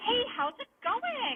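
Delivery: put-on obnoxious voice. Recalling the greeting workers had to give every customer, put-on obnoxious greeting voice. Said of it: "in the most obnoxious voice".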